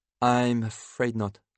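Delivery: ordinary delivery, nothing marked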